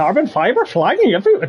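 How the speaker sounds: rushed, put-on attempt at a Northern Irish Belfast accent. Repeating another speaker's line as an attempt at a northern irish accent. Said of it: "that was my attempt at a Northern Irish accent".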